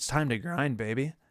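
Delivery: voice cracking, breaking partway through. Speaker talking about feeling burnt out but pushing on; voice cracking. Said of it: "With the voice crack and everything".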